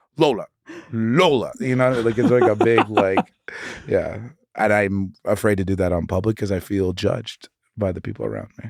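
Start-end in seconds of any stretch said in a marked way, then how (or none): 0.2-1.6 annoyed, cross, scolding delivery. Showing how she talks to her dog when mad at her, mad voice. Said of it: "when I'm like mad at her".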